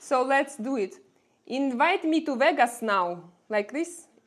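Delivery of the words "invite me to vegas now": put-on Russian accent, higher pitch and louder. Speaker quoting a meme line from an American show, in a Russian accent. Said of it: "said by a girl with a Russian accent".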